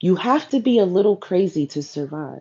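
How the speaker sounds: ordinary talk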